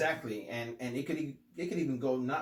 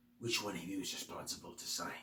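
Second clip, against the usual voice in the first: creepy, hushed, very scratchy half-whisper; 4 semitones lower, 7 dB quieter than usual. Quoting a creepy guy's line, in a very scratchy tone of voice. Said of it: "he talks in a very uh, scratchy tone of voice".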